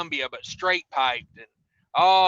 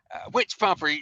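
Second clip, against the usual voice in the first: mock attitude-laden, snarky, snippy tone. Retelling what a cashier at the counter said: imitating a snarky cashier. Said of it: "she was just so snarky".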